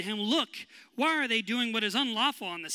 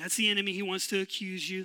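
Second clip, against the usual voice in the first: ordinary talk, nothing marked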